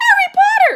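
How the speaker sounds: very high, loud, squeaky elf voice. A creature greets Harry in a high-pitched Dobby voice. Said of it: "Said the creature in a high-pitched voice".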